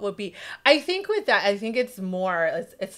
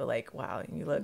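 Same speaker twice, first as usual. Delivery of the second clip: softer, slightly lowered voice; 7 semitones lower, 11 dB quieter than usual. Showing how they sound when giving someone a compliment, slightly lowered tone. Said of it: "I may lower my tone like a little bit".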